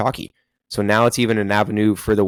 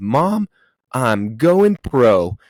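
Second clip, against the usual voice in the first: loud, full-lunged hollered shout; 3 semitones higher, 4 dB louder than usual. Telling a story about a kid volunteering to play, retelling a kid's shout. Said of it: "top of his lungs".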